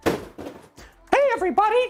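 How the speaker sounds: high-pitched cartoon mouse voice. Doing a requested voice for viewers who asked for it: Mickey Mouse voice. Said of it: "Who wants to hear the Mickey voice?".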